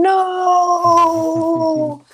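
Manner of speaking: high, loud put-on impression cry. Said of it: "my best William Shatner impression".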